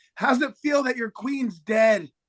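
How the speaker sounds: acted, very high-pitched, jeering taunt. Retelling heckling the opposing goalie: imitating own heckling. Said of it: "I may have had a heckle".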